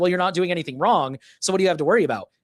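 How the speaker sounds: high, snide, sarcastic tone. Speaker complaining about cameras, quoting the other side's argument, mocking their argument sarcastically. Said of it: "all my thoughts are sarcastic".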